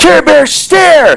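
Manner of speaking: high-pitched cartoon-style shout. Retelling the cartoon as the bears gang up: Care Bears calling their attack. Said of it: "ten or twelve Care Bears ... they'd be like".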